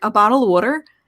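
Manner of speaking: put-on Philadelphia accent. Retelling ordering at a Dodgers game: imitating own Philadelphia accent. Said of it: "let me get my accent straightened out".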